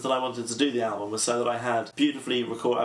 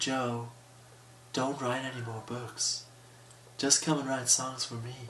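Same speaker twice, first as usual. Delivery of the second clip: put-on voice, breathy; 7 dB quieter than usual. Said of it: "I'm going to do an impression of [name]. ... That's my [name] voice".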